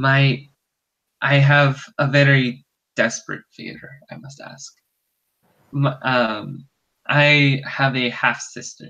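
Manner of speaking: conspiratorial, secretive, slow character voice. Voicing a nervous man asking the players a desperate favor, half-whispering in character. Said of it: "And he's whispering to you guys".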